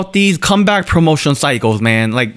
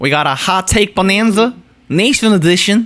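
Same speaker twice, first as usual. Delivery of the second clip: put-on southern American accent; 2 semitones higher than usual. Host greeting everybody to open a hot take segment; southern accent. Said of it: "I don't know why I said that in a southern accent".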